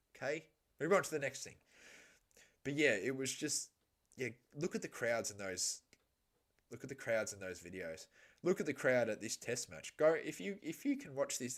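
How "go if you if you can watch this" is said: high voice cracking mid-phrase. Speaker telling viewers to watch the test match crowd videos, voice cracking. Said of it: "I just voice cracked".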